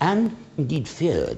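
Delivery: ordinary delivery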